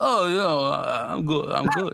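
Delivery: put-on slurred rural voice. Guest on a show where everyone does Rocky impressions, answering the host: bad slurring hillbilly Rocky impression. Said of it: "sounded like a slurring country hick".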